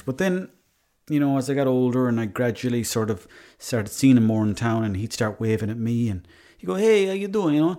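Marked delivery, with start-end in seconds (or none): 6.7-7.8 put-on Italian accent, pitched very high. Retelling how the italian fella in town greeted him, italian accent. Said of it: "and I can do that accent".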